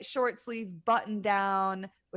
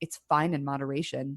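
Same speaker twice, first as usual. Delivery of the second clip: put-on, low, very dry, flat, unbothered deadpan; 6 semitones lower than usual. Recapping a scene, quoting Caitlin's reply to Kathleen: mimicking a deadpan reply. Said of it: "Like very deadpan".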